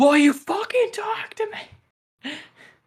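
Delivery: very high, slow, drawn-out yell. Retelling a movie character yelling at a mannequin: imitating someone yelling. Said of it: "yelling at one of them".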